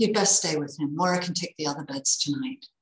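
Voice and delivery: ordinary delivery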